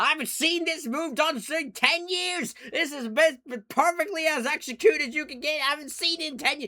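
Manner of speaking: put-on thrilled, gushing announcer. Retelling an announcer's repeated call of a wrestling move: imitating an excited announcer. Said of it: "J R is so excited".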